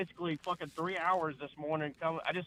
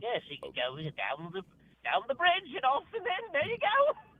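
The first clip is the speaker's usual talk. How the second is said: put-on villainous bad-guy voice, higher; 9 semitones higher than usual. Showing how a D and D character would speak: villainous character voice. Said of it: "That's a great character voice".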